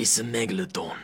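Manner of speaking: put-on British accent, action-star style. Doing an impression in an interview, imagining being bald and British: Jason Statham impression. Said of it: "Great Jason Statham impression".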